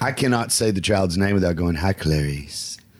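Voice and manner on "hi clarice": sinister, creepy put-on voice. Joking about saying a child's name from a horror film: put-on creepy voice. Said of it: "that was creepy".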